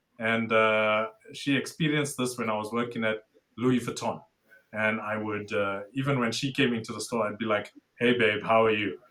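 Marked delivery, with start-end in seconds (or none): 8.0-8.9 mock formal business voice. Retelling greeting a partner at work: imitating own suit voice. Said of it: "my partner actually says I've got a suit voice".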